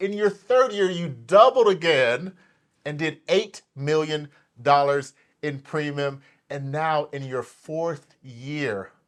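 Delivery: slow, loud, dramatic building delivery. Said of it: "I have to say it slow".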